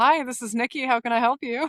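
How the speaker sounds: polished, professional customer service phone voice. Pretending to take a phone call: customer service voice. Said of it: "your customer service voice".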